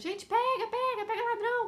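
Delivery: acted furious, very high, loud street shout. Retelling chasing a bike thief down the street: retelling a furious shout. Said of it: "correndo e gritando".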